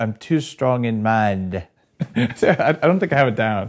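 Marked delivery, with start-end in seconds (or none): 0.0-1.6 tentative, attempted Australian accent. Asked by another speaker to show it, giving an attempted australian accent. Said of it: "Let me hear your Australian accent".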